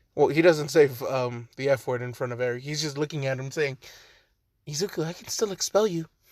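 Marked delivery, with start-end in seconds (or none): none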